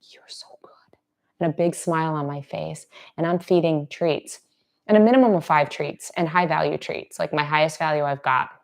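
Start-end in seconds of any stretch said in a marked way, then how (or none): 0.1-0.7 soft, barely audible whisper. Demonstrating how to praise a sensitive dog, in a whisper. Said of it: "then it's a whisper".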